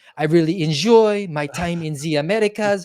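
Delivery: put-on strong French accent. Imitating a French leader speaking English to Americans: big French accent. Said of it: "his big French accent".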